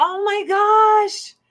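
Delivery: high, slow, exasperated groaning oh my gosh.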